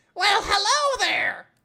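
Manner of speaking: very high, very loud, belted cartoon voice. Greeting newcomers as a mushroom character, Toad voice from Mario. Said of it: "Now he looks sounds like a toad".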